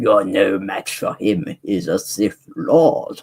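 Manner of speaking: slow, deliberate, drawn-out put-on voice. Redoing an impression while commenting on a Star Wars episode, Palpatine impression. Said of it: "my bad Palpatine impression there".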